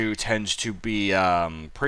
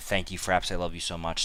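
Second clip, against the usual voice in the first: sarcastic, mock-sincere fake gratitude; 3 semitones lower, 9 dB quieter than usual. Thanking Fraps after worrying it split the videos: sarcastic. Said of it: "Sarcasm fully intended".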